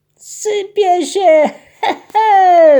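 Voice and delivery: very high, loud, very drawn-out joyful exclamation. A sailor watches salt pour from his stolen little mill and exclaims joyfully. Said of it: "wykrzyknął uradowany".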